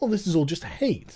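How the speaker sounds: condescending, dismissive, patronizing tone. Mocking a writer's dismissive comment: mock condescending tone. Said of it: "And I love the condescending tone".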